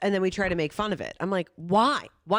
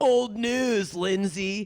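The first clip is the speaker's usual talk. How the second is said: put-on dismissive, bored dude voice. Mocking a dismissive guy to the other speaker: put-on dismissive dude voice. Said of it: "You do that voice for me, too".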